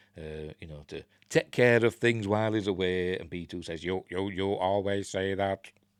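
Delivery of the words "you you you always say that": flat, level, monotone robot voice. Retelling a scene where B2EMO replies, B2EMO robot voice. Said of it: "that was my robot voice".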